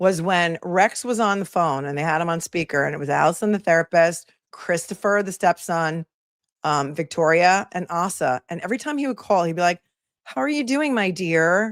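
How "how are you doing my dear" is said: deliberately creepy put-on voice. Retelling how a man greeted someone on a phone call: imitating a creepy voice. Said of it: "So creepy".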